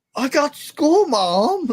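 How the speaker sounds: put-on very high little girl voice. Describing a funny video, he quotes the little girl to her mom: little girl in a different accent. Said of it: "the little girl goes".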